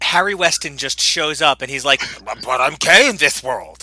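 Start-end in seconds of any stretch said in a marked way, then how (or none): 2.2-3.8 pitch swung up and down, badly played. Joking about the doctor just showing up in the episode, do a really bad Dr. Harry Weston impression. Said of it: "my really bad Dr. Harry Weston impression".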